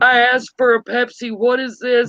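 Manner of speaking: tough Italian mafia boss voice. Retelling a commercial where a girl orders Pepsi and gets Coke; Italian mafia boss voice. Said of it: "she goes all Italian mafia boss".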